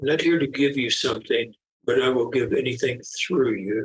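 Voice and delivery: very soft, gentle, barely-there hushed voice. Retelling a voice heard during a session in a circle of light, very soft voice. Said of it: "very, very soft, soft voice say".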